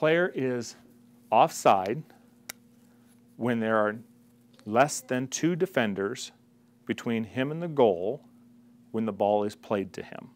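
slow, measured, halting, deliberate, broken into chunks. Explaining how offside works to viewers, said slowly. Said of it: "I'll say the magic sentence slow".

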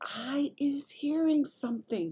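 whispering. The BFG, hushing Sophie because he hears something, whispered back. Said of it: "the BFG whispered back".

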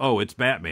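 ordinary delivery

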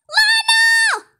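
screaming. Calling out to someone who just lied, screaming. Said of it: "why are you screaming?".

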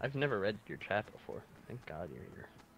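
mocking ironic tone.

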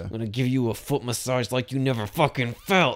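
mock aggressive outburst pushed out through clenched teeth. Describing a film scene, the speaker acts out a character's line: mock yell through gritted teeth. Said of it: "gritted teeth and yelling like".

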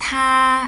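tā held on a flat, high level tone. Chinese lesson teaching 她, meaning she: high level tone on tā. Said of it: "이렇게 높게 발음해 주시면 돼요".

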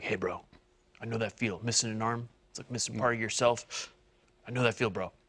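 half-whispered, very soft, barely above breath. Retelling what the speaker said to the gargoyle, half-whispering. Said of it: "I whispered to the gargoyle".

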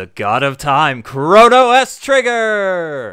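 very loud, booming game show host voice. Introducing a guest at the start of the show, in a game show host voice. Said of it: "it turned out to be my game show host voice".

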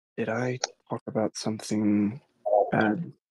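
soft and hushed. A character quietly asks her something after she takes the food: quietly asking. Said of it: "He quietly asks".

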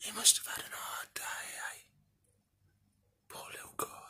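soft, unvoiced whisper. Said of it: "I don't wanna speak too loud".

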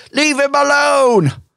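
play-acted very high, shrill shout. Voicing someone in the crowd who shouts at another: shouting at someone. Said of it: "shouts at, out and sort of, like".

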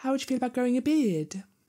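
very high-pitched voice. Quoting a film's last line as Emma Watson: Emma Watson impression. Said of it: "That's my Emma Watson impression".

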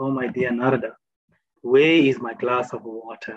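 very gentle, tender put-on voice. Retelling how Lord Krishna asks Narada for water: gentle Krishna voice. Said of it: "very gently he asks".

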